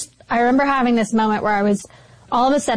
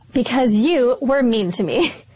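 put-on spiteful, catty, snide delivery. Retelling what he said to her while she cried, imitating a catty voice. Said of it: "in this really catty voice".

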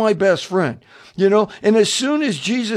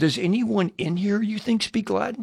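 whispered, quieter; 8 dB quieter than usual. Retelling leaning back over to ask a woman a question, retelling a whispered question. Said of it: "I'm whispering again".

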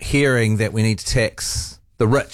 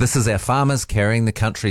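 ordinary talk

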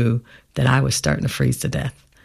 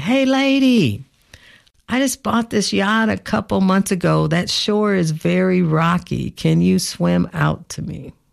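high, slow, carrying call. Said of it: "And he yells to me".

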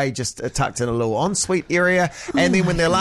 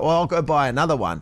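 usual speaking voice

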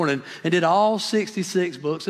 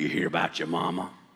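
very deep, gruff, hushed smoker's voice; 13 semitones lower, 7 dB quieter than usual. Retelling an uncle's question on walking into the house, in Uncle Luby's gruff voice. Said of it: "He had his gruff voice".

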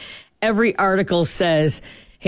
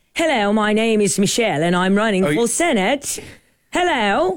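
phony, put-on British accent; 4 semitones higher than usual. Showing what they'd fake if they ever faked a voice, fake British accent. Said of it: "A British accent?".

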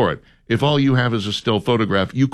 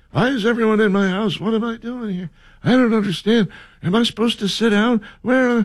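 put-on confused grandpa voice, higher pitched; 11 semitones higher than usual. Imitating a grandpa at Thanksgiving like Joe Biden: imitating confused Joe Biden. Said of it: "we went from just confused".

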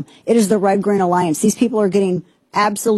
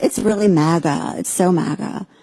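put-on woman's voice, much slower; 2 semitones lower than usual. Quoting a woman's remark about a restaurant, imitating how she talks. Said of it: "That's how she talks".

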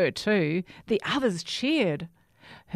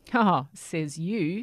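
sniggering, much slower. James answers Herbert, sniggering. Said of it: "sniggers James".

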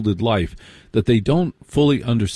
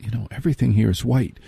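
imitated, put-on whisper. Retelling a remark made to a girlfriend while eating: retelling a whisper. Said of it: "And I whispered to my".

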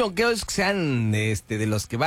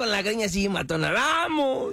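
high, slow, drawn-out, hyped-up bro voice. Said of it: "cara de uno de los yonqueros".

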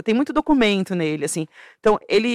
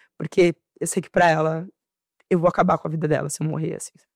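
tearful, crying through the words; 4 semitones lower than usual. Speaker talks about their mother, crying while speaking. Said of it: "desculpa, eu sou chorando".

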